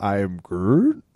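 word said with rising, lifted intonation. Recalling how he said the line like a question: rising question intonation on Groot. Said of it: "he kept saying it with a question mark".

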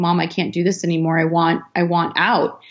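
put-on crying, tearful voice. Retelling calling mom at twenty about wanting out, retelling crying to mom. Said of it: "called my mom and crying".

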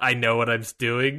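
mock smirking, smug tone. Retelling a customer who refuses a mask: imitating a smirking, smug reply. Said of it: "that smirk of, like".

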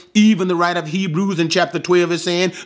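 fast, hurried, rushed sermon-style preaching delivery.

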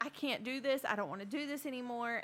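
mock sobbing, put-on crying voice. Retelling how a man broke down, imitating him crying. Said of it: "he's just crying".

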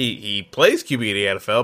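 plays stressed with a rising pitch. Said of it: "emphasis on the word plays".

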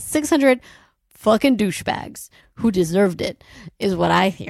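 words broken up by laughter throughout. Reacting to hearing that six hundred men were killed, laughing while talking. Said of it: "I don't know why I'm laughing".

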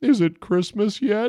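glum, sad, slightly high mumbled cartoon voice. Watching the game go wrong, speaker mumbles to themself in a mock-sad Homer voice. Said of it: "In my sad Homer voice, I mumbled to myself".

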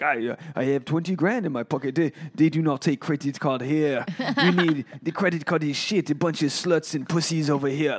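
put-on eccentric French woman's accent, ranting. Retelling what an eccentric French lady said, in a French accent. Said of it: "that was a good accent".

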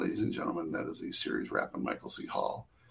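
very quiet, hushed, whispered announcement. Retelling a crew member announcing the series wrap, imitating someone speaking very quietly. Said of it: "our first A D very quietly saying".

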